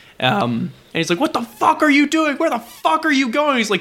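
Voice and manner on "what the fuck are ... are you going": put-on, very high-pitched angry yelling. Retelling a driver braking for a man in the road, imitating him yelling. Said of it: "Just like yelling at this dude".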